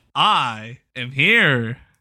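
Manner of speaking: stiff, loud, wooden and forced unnatural delivery. Trying the opening line again after calling it unnatural: even less natural delivery. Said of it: "That sounded way less natural".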